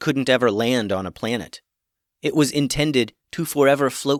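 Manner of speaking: ordinary delivery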